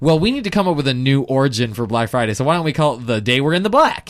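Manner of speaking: ordinary delivery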